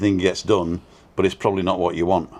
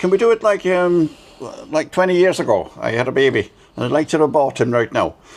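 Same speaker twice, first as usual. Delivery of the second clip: weird mid-Atlantic put-on Irish accent, pitched up; 7 semitones higher than usual. Quoting a friend in Ireland to the other speaker, weird mid-Atlantic Irish accent. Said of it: "where is she from with that weird accent?".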